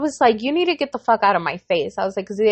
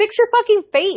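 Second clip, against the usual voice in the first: play-acted, very high, shrill, furious snap; 9 semitones higher than usual. Recounting an argument with him, retelling an angry snap. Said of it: "I was like losing my shit".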